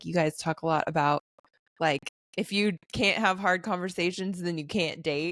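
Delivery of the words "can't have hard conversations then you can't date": ordinary talk, nothing marked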